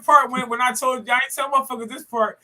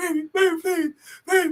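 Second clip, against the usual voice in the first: put-on crying, pleading tone, slower; 4 semitones higher than usual. Imitating a man on his knees begging, imitating someone crying and pleading. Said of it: "on his knees one time crying".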